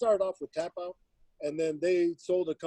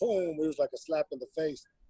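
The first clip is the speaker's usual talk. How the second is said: plain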